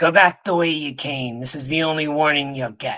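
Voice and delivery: harsh, gruff dwarven woman's voice. A voice calls a warning from the shadows of the pillars: harsh, gruff female dwarf voice. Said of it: "a harsh voice calls ... It's gruff, it's dwarven, but it's female".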